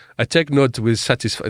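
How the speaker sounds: put-on French accent, read aloud. Reading out an official's tweet verbatim: put-on french accent. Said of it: "I'm gonna stop doing a French accent".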